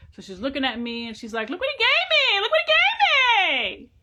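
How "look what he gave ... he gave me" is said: shrill, very high, swooping yell, "gave" stretched. Retelling a relative who screamed about shopping money: imitating her yelling. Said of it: "exactly like I just yelled".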